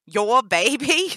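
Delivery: very loud, high, scornful mocking laugh. Danny answers someone begging to be let out, laughing. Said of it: "Danny laughed".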